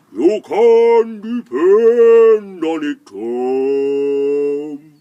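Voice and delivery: very loud, very slow, booming, drawn-out voice. Narrator reading a story where the clouds answer tom, in a cloudy voice. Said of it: "they said in a cloudy voice".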